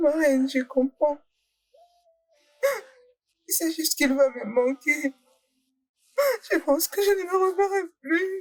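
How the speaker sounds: tearful, weeping speech, crying while talking. Telling the queen they will miss a friend who died, crying while talking. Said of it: "Arrête de pleurer".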